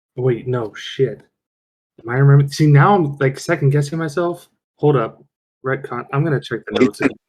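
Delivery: plain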